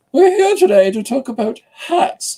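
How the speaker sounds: very high regal voice. Opening a page with the Queen speaking, do a Queen Elizabeth impression. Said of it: "That's my Queen Elizabeth impression".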